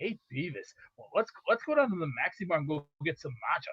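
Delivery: very low, deep cartoon voice. Showing the other speaker an impression of Beavis and Butthead: Butt-Head impression. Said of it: "I can actually do the best impression of Beavis and Butthead".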